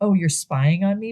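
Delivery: mock coy, teasing tone. Retelling a movie scene, a character confronting her partner: imitating a coy tone. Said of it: "saying it in a very coy manner".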